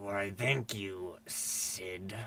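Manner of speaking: through gritted teeth. Narrating a character's reply to Sid, through gritted teeth. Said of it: "Through g- gritted teeth, he goes".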